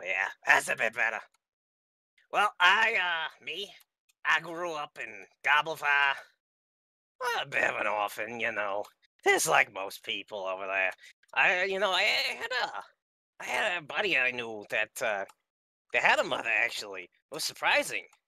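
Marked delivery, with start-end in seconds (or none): 2.3-18.0 goblin voice, hesitant and rambling. Telling the goblin character's backstory in character: Wellblood goblin voice. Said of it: "neutral evil goblin ranger".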